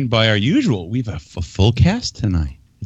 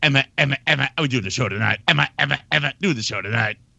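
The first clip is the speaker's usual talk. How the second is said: quieter, glitchy TV-character voice; 3 semitones higher, 5 dB quieter than usual. Mimicking how the other speaker sounds about tonight's show: Max Headroom voice. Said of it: "You sound like Max Headroom".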